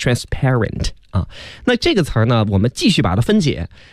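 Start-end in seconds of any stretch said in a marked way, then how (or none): 0.0-0.9 "transparent" said with stress on "par". Breaking down an English word's stress, stress on syllable 'par'. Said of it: "它的这个重音呢是在后面，就是在清辅音p 它的上面".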